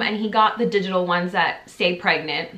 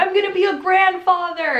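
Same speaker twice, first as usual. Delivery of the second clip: put-on, shrill, very high, thrilled squeal-shout; 11 semitones higher than usual. Retelling how the dad shouted out at the news: imitating an excited shout. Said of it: "he just shouted out".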